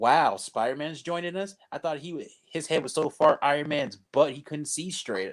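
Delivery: ordinary talk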